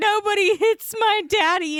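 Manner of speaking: very high, stretched-out, drawn-out screaming. Retelling a fight scene, quoting what she screamed: imitating a scream. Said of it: "she starts screaming, like".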